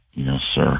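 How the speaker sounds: quiet, low mumbling. Retelling how the team answered the coach: imitating a low mumbled reply. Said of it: "very low".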